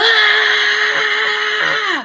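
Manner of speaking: sudden high scream at the top of his lungs.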